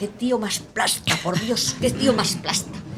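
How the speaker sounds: soft, slow, fed-up grumble.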